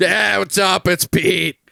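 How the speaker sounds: loud, rough, grinding, horrifying voice. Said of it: "He's got a horrifying voice".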